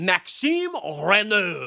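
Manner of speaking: name pronounced with a French accent. Reading out a draft pick, saying the player's name: French accent. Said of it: "I did want to say it in a French accent".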